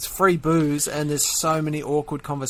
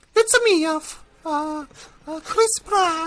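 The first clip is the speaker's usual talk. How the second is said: put-on heavyset Italian-accented man voice, much higher pitch; 13 semitones higher, 3 dB louder than usual. Answering a request for a voice, in a fat Italian plumber voice. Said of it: "Can you do a fat Italian plumber voice?".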